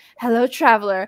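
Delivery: bad, fake, laid-on-thick British accent. Retelling a D&D role-play TikTok greeting, in Trisha Paytas's bad fake British accent. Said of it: "she has the worst fake British accent".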